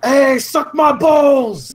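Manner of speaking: put-on shrill, high, loud, yelled New York accent. Picking a language to shout insults in, the speaker shouts in a New York accent. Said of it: "I shout in New Yorker".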